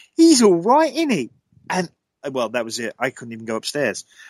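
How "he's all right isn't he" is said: put-on loud, very high child's voice, real Cockney accent. Retelling a ghostly voice heard on a recording: imitating a cockney child's voice. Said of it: "It was a child's voice".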